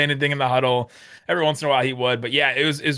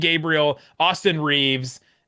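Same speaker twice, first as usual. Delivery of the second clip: ordinary delivery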